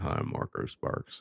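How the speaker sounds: low, slow, breathy near-whispered murmur. Imitating the co-host's low voice as Sam Elliott. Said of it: "that's some Sam Elliott".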